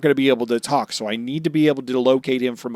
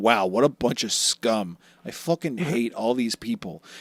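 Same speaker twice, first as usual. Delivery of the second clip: soft, sneering, contemptuous put-on tough-guy voice; 5 dB quieter than usual. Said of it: "goofy fanboy to".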